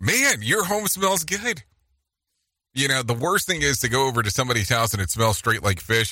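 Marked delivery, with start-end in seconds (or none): 0.0-1.6 high, surprised, caught-off-guard exclamation. Advice on complimenting how someone's home smells, what to avoid: surprised tone. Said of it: "never say it with the surprise tone on your voice".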